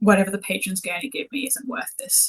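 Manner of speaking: quiet, murmured, half-swallowed words. Game master voicing a woman speaking to another character, in a murmur. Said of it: "her voice is very much like this is like a murmur".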